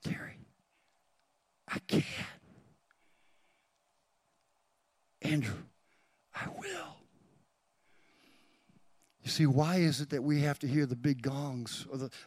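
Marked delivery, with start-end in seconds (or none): 0.0-7.0 whispered, hushed, soft godlike voice. Preaching that god whispers, voicing god's words: whispering as god. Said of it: "Do you hear him whispering again?".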